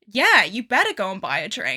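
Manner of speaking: half-joking, sing-song, put-on jokey yet sincere. Retelling own reply at a bar: imitating own half-joking tone. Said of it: "half joking, half trying to be lighthearted".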